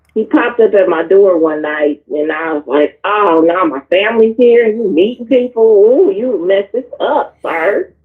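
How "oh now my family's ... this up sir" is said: ordinary delivery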